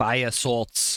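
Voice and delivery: put-on Boston accent. Naming an item found in the game: Boston accent. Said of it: "You gotta say it with a Boston accent".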